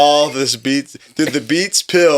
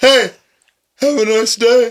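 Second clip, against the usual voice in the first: put-on nasty, vicious yell, high and hollered; 9 semitones higher, 4 dB louder than usual. Retelling what Austin Crane yelled to an old lady, imitating Austin Crane yelling. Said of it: "Just yelling at people".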